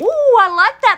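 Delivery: high, loud, delighted squeal of "ooh".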